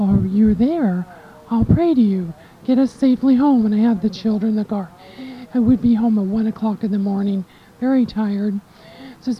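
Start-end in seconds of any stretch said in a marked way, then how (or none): none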